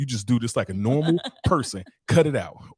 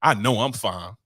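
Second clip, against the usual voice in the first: put-on sassy voice. Imitating how some men brag about their looks: imitating men saying it sassily. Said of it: "That's how they sassy".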